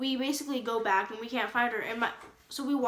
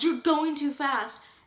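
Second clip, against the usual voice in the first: put-on, loud shouting; 4 semitones higher, 3 dB louder than usual. Retelling how a man chasing their car yelled: imitating a man yelling. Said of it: "he yelled".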